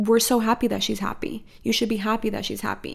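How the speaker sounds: normal talking voice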